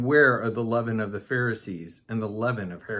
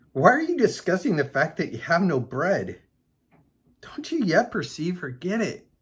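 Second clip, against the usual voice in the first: high-pitched speech broken by laughter; 7 semitones higher than usual. Reading a bible passage aloud and finding it funny, laughing while speaking. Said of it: "I'm laughing because it's kind of funny".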